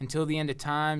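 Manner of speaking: ordinary talk, nothing marked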